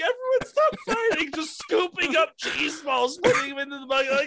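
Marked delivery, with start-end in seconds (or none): 0.0-1.3 very high, tearful put-on crying. Imagining friends picking up cheese balls during a fight, mock tearful pleading.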